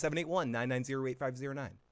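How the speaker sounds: rushed, quick speech. Reading out the call-in phone number, said very quickly. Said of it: "I said that very quick".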